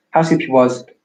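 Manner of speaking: northern English "you was", said loudly.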